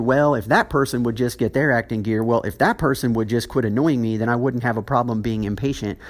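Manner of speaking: ordinary talk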